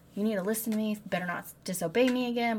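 put-on angry, forceful delivery. Retelling what he told the maiden: retelling an angry order. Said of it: "he is mad because he could smell her".

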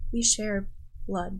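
hushed, very quiet, soft voice. Voicing a character revealing matching arm markings: speaking very quietly. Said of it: "says very quietly".

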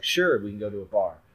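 normal talking voice

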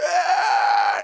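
very loud, high, anguished cry of agony. Retelling how someone reacts on hearing bad news: imitating a shout of agony. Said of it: "it's a shout of agony".

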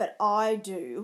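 loud, snarling, snarled delivery. Mercutio snarls back at Romeo, who says he has no choice. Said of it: "snarled Mercutio".

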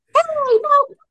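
put-on loud, very high, unbroken boy's voice. Speaker recalls a classmate from sixth or seventh grade; imitating a loud high-pitched kid. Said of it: "very, his voice hadn't dropped yet. It was very high pitch".

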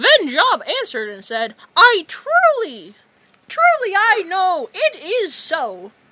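loud, swooping squeak. Asked to read a random Bible passage, Mickey Mouse voice. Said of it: "read in the Mickey Mouse voice".

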